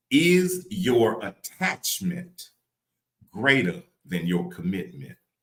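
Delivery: very slow, deliberate, every word weighed. Speaker shares a question from a note that touched their spirit, saying it real slow. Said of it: "I'm gonna say it real slow".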